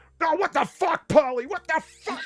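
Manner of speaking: put-on angry outburst, getting mad. Retelling how a friend reacted to a picture on waking: imitating Far getting mad. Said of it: "she got so mad".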